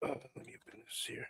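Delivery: sultry, breathy, hushed whisper. Going through Mezco accessories, opening the package in a porno voice. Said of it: "I didn't mean to do the porno voice there".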